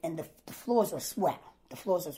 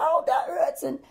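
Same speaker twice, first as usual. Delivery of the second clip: mock pained scream, much higher pitch; 9 semitones higher, 5 dB louder than usual. Retelling being taken by ambulance, the speaker re-enacts screaming in pain. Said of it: "I'm screaming like".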